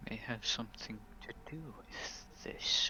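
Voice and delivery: very quiet, whispered mutter under the breath. Speaking in character, reacting to talk of a magic-using man: muttering under breath. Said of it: "I mutter under my breath".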